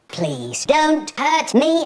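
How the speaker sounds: put-on thin, weedy little voice. Retelling what a man who stood up said to him: weedy little voice. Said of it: "In a weedy little voice".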